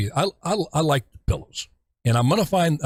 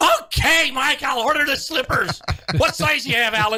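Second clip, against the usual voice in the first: shrill, very high-pitched yelling; 10 semitones higher than usual. Retelling what a woman yelled at a TV commercial, retelling a yell. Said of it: "she was yelling at the screen".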